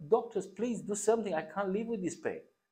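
put-on very high, shrill, pleading scream. Speaker recalls pleading with doctors while in pain, retelling own screaming. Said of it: "I was screaming like".

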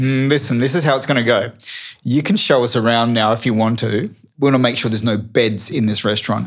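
ordinary delivery

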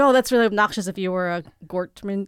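ordinary talk, nothing marked

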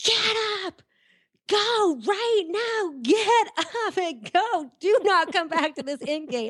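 mock very high, shrill yelled voice. Recalling walking back to the in gate when Chester yelled, imitating Chester yelling. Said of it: "I hear Chester yelling".

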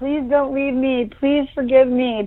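put-on earnest, high, pleading beg. Recalling being down on their knees in the driveway, retelling begging him. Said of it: "I was begging him".

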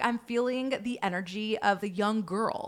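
ordinary delivery

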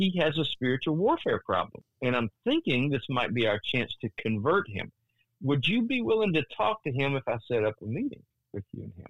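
ordinary talk

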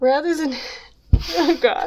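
words broken up by giggles, laughing throughout. Trying to read a passage aloud to the other speaker: laughing while talking. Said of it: "'cause I'm laughing too hard".

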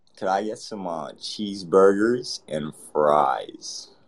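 put-on, attempted American accent. Prompted to try one after protesting it's hard, speak in an American accent. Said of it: "can you do an American accent?".

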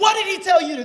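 high-pitched yelling. Retelling a call where a friend answers a question: imitating someone yelling. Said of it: "yelling at me".

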